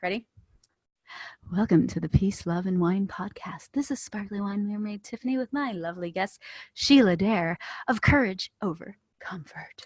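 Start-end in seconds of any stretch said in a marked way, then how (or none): 1.5-9.9 sexy, sultry voice, much quieter. Podcast host restarts the intro and welcomes her guest, in a sexy voice. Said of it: "We have really sexy voices right now".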